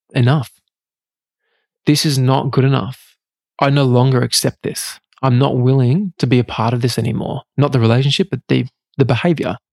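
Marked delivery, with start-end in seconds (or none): none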